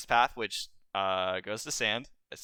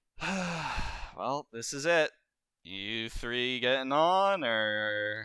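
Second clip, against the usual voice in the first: sigh, then the final "or" stretched out; 2 semitones higher than usual. Voicing a taxi driver who looks at the party and sighs: deadpan, sighing. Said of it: "then he sighs. He goes".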